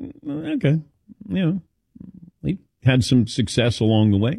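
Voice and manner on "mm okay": high, soft, unimpressed eh, shrugging it off. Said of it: "you go".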